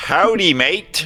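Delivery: put-on Australian accent. Speaker tries out a short greeting in an australian accent impression. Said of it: "that was my only Australian impression".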